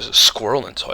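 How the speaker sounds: plain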